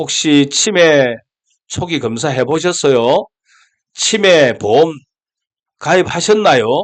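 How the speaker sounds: sneering, sarcastic tone.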